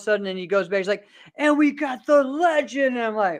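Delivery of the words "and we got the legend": showman announcer voice, pitched up and drawn out. Retelling how Murphy announced the competitors: imitating Murphy announcing. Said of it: "announcing all of us".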